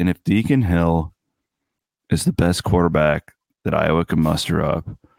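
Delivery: broadcast show-host cadence and delivery. Telling the host what made him laugh: imitating John's delivery. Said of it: "You were talking like this".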